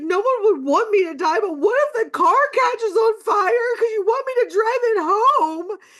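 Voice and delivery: put-on very high, childlike, tearful sobbing with fear. Retelling a phone call with her mom while scared: imitating her own sobbing. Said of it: "I'm like sobbing like a five year old".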